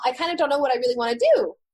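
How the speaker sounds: question-like upward lift, high rising end on do. Intonation feedback, a statement that sounds like a question; high rising pitch ending on do. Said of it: "more of a high pitch tonality at the end of it".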